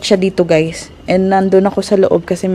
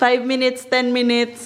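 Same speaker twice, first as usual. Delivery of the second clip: ordinary talk, nothing marked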